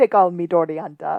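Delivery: put-on Jamaican-accented voice. Retelling how someone answered a request to say it that way: Jamaican accent. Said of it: "do it in your Jamaican accent".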